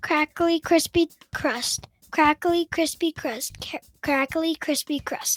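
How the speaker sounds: rapid, quick-fire repetition with a stumble. Trying a tongue twister three times in a row, said three times fast. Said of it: "Let's try to say it three times fast".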